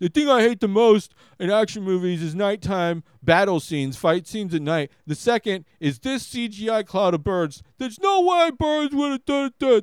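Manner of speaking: high, loud, griping complaining rant. Imagining complaining about a movie's bird scene: impersonating himself complaining. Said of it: "this is my impersonation of me".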